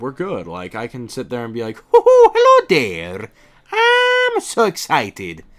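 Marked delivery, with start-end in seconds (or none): 1.8-5.4 very high, very slow, loud, booming, swooping sing-song voice. Showing how the voice sounds while practicing alone: Mario voice. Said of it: "keep in practice with the voice".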